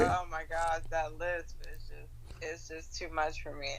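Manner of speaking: ordinary talk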